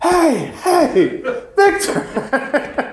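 mock very high-pitched yell. Retelling how Father Shoemaker called out across the field: imitating Father Shoemaker yelling. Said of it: "I hear a voice yell at me again".

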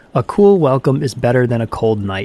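ordinary delivery

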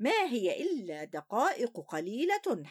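ordinary delivery

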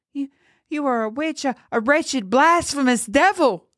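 shrill, very high-pitched screaming. Narrator reads a man confronting the girl, screaming. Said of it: "He screamed at her".

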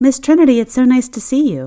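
warm welcoming tone. The narrator greets Miss Trinity, waiting at the door, warmly. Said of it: "I said warmly".

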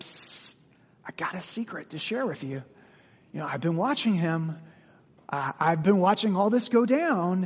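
hushed, confiding, secretive tone. Explaining that verse 4 is spoken in the tone of a secret, secretive tone. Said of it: "verse 4 is spoken in the tone of a secret".

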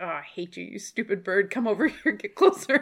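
running, cussing, grumbled insults. Re-enacting cussing at birds while out birding: retelling muttering under breath. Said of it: "just under my breath the whole time".

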